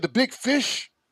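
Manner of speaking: high, intense, awestruck superfan excitement. Imitating the other speaker sounding like an excited fan: imitating an intense fan. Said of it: "that's what you sounded like".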